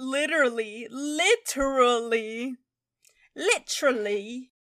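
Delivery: slow put-on English accent on every word. Repeating a word for fun: put-on english accent. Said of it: "You're starting to talk like an English person".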